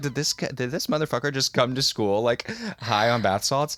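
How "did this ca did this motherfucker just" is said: plain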